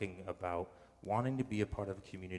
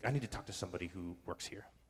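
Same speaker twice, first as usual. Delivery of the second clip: put-on furious woman's livid, demanding tone. Retelling a woman demanding to talk to someone who works here: imitating a livid woman. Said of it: "she is just livid".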